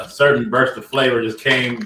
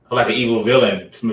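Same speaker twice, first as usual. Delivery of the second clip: plain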